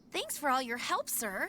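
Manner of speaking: fake, phony, insincere-sounding voice. A character the viewer calls evil thanks an old man: fake voice. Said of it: "That voice is so fake".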